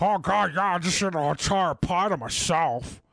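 put-on fat-person voice, smothered and choking. Quoting their past self, the speaker uses their put-on fat person voice. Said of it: "I'll do it in that voice too".

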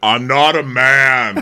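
very slow, stretched-out, mannish drawl. Introducing a friend to listeners, imitating friend Jessica's voice. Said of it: "She's got a voice like this".

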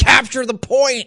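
small, high-pitched, half-shouted yell. Retelling losing a match and yelling at the tv: imitating own yelling. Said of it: "I yelled at my T V a little bit".

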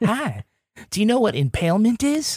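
cheery, upbeat delivery. Imitating a podcast host cheerfully discussing heinous things: imitating Bill Rankin's upbeat voice. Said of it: "It makes you feel good".

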